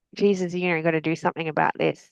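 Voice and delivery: ordinary talk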